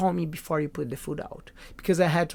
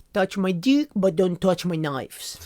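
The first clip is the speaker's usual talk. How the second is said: thick, put-on French chef's accent; 3 semitones higher than usual. Quoting a French chef he worked with about his knives; French accent. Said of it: "like with the French accent".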